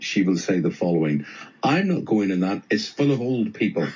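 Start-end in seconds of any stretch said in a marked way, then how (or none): none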